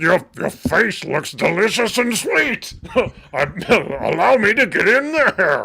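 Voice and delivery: put-on monster voice. Asked to give their best Venom for an image, the speaker does a Venom voice. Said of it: "Give us your best Venom right here".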